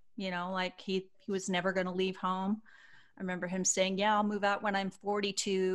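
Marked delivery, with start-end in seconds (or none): none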